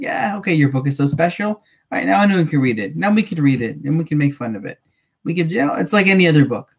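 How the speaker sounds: ordinary talk, nothing marked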